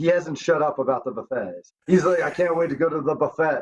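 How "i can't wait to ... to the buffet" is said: ordinary talk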